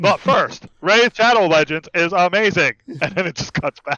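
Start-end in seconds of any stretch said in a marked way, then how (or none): 0.0-2.7 robotic voice. Joking about an ad cutting in on tonight's D&D, in a robot voice. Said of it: "comes over with a robot voice".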